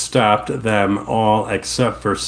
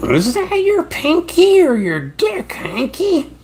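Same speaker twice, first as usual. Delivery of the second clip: very high, slow, stretched-out swooping voice; 3 dB louder than usual. Acting out a mock scene, the speaker does a Marge Simpson voice. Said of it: "Here's Marge Simpson sleeping with Hank Schrader".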